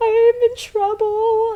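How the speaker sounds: put-on weepy voice, very high, slow, drawn out. Retelling a prank call to a dad: imitating own fake crying. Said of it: "totally sounded like I had been crying".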